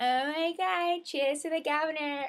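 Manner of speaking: high, loud, drawn-out put-on Valley Girl voice. Retelling the toast everyone said together: put-on Valley Girl voice. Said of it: "say it in a Valley Girl voice".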